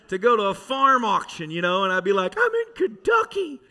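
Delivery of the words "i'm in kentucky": mock, very high, excited, thrilled outburst. Retelling crossing the Kentucky state line for a farm auction, acting out past excitement. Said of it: "how excited I was".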